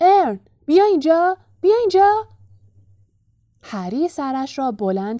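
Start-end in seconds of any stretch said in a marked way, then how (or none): 0.0-2.3 loud, very high calling shout. Stan, standing at the bus door, calls out to Ern: shouting. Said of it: "استن فریاد زد".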